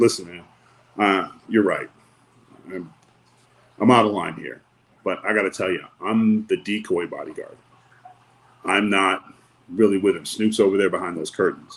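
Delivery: plain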